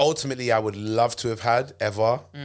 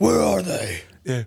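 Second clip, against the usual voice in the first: husky, tense, pitched-up masked-hero voice; 5 semitones higher, 4 dB louder than usual. Discussing the strain of playing Batman, doing a husky Batman voice. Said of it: "he speaks with a husky voice".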